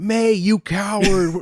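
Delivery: play-acted, fed-up, angry shout. Retelling watching the show and yelling at a character: imitating own shouting at the tv. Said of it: "shouting at my T V".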